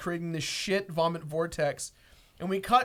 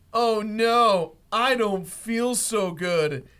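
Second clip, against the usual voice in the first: loud, very slow, drawn-out queasy groan; 3 semitones higher, 5 dB louder than usual. Retelling a story about a man falling ill: acting out a sick groan. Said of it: "acting out sick character's groan".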